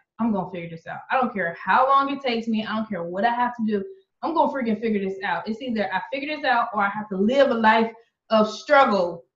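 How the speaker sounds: normal talking voice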